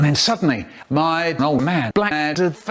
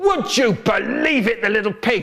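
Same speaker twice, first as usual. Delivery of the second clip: mock furious dad voice, high and roaring; 6 semitones higher than usual. Telling a story about the speaker's dad and brother, retelling dad's roar. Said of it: "he's roaring".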